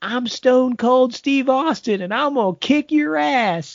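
mock, very high-pitched yell. Recounting a voice that yelled back when nobody could see anything, imitating someone yelling. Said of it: "we hear a voice yell back and say".

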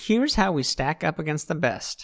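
ordinary delivery

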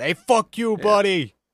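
put-on thick Boston accent, very high, shrill and loud. Discussing New England characters in a Pixar movie, imitating them in a hard Boston accent. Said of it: "they got the hard Boston accent".

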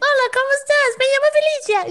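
put-on very high, childlike little-kid voice. Showing how the voice rises in Spanish: higher voice when speaking Spanish. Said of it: "I all of a sudden just become, like, a little kid".

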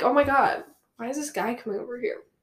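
normal talking voice

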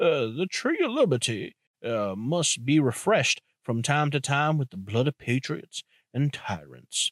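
put-on Southern old statesman delivery, swinging pitch. Quoting a founding father's line about liberty: Thomas Jefferson impression. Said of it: "I'm gonna try and say it as John Jefferson".

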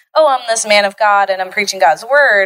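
ordinary talk, nothing marked

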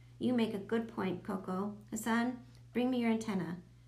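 ordinary delivery, nothing marked

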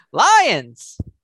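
very loud, high-pitched shout. Answering again when asked for their pick, yelling. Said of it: "Sorry for yelling".

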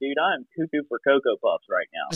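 acted freaking-out tone. Retelling hearing a voice in class, imitating own freaking out. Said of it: "I'm freaking out".

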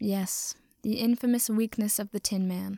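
ordinary delivery, nothing marked

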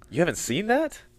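pitch lifting at the end, on "that". Opening the first ever episode, ask with rising pitch on that. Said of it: "You don't have to say it with that upward inflection every time".

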